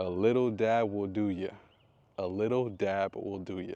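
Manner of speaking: light, slow, drawn-out Southern twang. Quoting an art teacher's saying about glue: Miss Bowen with Southern twang. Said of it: "You put a little Southern twang on it".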